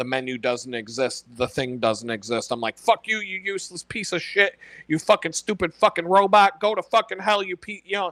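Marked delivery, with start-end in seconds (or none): 2.8-7.8 flat, monotone, furious ranting yell. Retelling getting mad at an AI's wrong answer: imitating yelling at a robot. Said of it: "yelling at a fucking robot".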